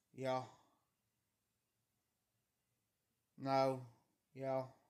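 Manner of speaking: soft, quiet, everyday speaking voice. Speaker shows their usual way of talking: soft voice. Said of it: "I have a soft voice. Like".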